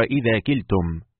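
ordinary talk, nothing marked

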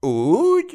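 slow, drawn-out, very high astonished wondering tone. Narrator voicing Kazimír replying to the speaker's warning: drawn-out, wondering voice. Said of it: "Kérdezte vontatott, csodálkozó hangon".

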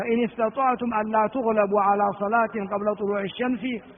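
ordinary talk

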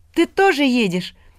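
gleeful, very high-pitched joyful cry. Narrator voicing Ilya asking his grandfather, joyful exclamation. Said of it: "радостно воскликнул Илья".

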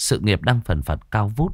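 ordinary delivery

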